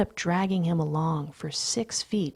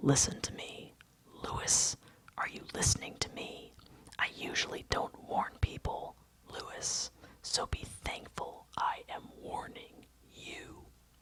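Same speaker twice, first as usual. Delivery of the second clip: hushed, breathy whisper under the breath; 10 dB quieter than usual. Reading aloud a character threatening a man up close: whispering under breath. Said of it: "I whisper under my breath".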